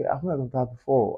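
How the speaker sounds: gentle, sweet tone. Retelling how Ayra answered a question about dating, in Ayra's soft, sweet voice. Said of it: "she has this soft, sweet voice".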